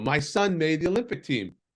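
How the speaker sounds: put-on thick European accent. Retelling how she ran to the store next door with news, thick European accent. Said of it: "she said in her very thick European accent".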